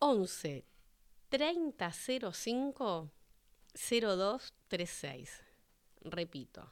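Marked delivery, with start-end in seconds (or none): 0.0-5.3 very slow, measured delivery. Reading out a new phone number for listeners to write down, very slowly. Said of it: "bien despacito, así lo anotan".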